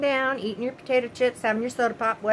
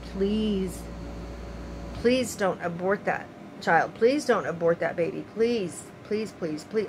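put-on, repeated, breathy, half-whispered pleading; 5 semitones lower, 4 dB quieter than usual. Recalling how the speaker once begged them, retelling their own begging. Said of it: "I begged them".

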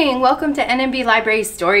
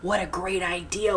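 hushed, very quiet half-whisper, barely audible; 4 semitones lower, 10 dB quieter than usual. Reading a story, Monkey answers Meerkat as they plot in secret: half-whispered. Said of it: "whispered Monkey".

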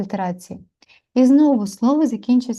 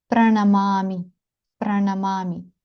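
ordinary talk, nothing marked

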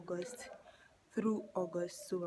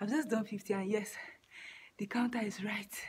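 panting, breathless, out-of-breath delivery; 2 semitones higher, 4 dB louder than usual. A speaker counting skipping reps on camera talks to viewers, panting and out of breath. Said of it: "Look at the way I'm panting".

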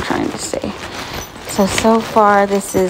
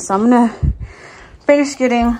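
short of breath, winded; 3 semitones higher than usual. Packing a hospital bag while talking to viewers, out of breath. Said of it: "I'm out of breath".

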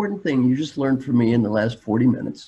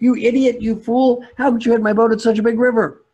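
angry, very high, loud shrieking scream; 10 semitones higher, 5 dB louder than usual. A storyteller voices a farmer after another boat runs into his: screaming. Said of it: "He stands up and screams".

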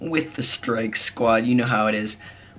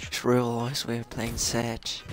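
put-on generic British accent, quieter; 7 dB quieter than usual. Gamer tries an english voice when asked to: put-on generic british accent. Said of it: "like a generic British voice".

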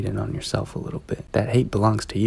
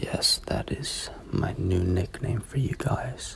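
put-on sudden shift into a slow, whispered British accent. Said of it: "Why did I just turn British".

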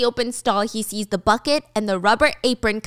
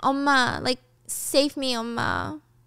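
very slow, crying, pleading voice; 2 semitones higher, 4 dB quieter than usual. Retelling a scene where a character cries for his mom: imitating someone crying. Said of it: "he keeps crying".

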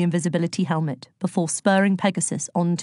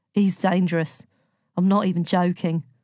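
ordinary delivery

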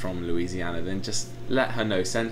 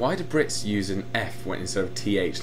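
ordinary talk

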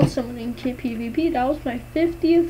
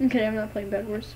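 ordinary delivery

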